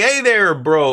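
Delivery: clumsy fake Canadian accent. Streamer imagining himself as a Canadian commentator, in a bad Canadian accent. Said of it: "I can't even do a proper Canadian accent".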